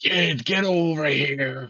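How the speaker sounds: loud, high, drawn-out shout in character. Running ahead for the crab in character, calling to the kid: in-character shout. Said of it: "I'll just shout".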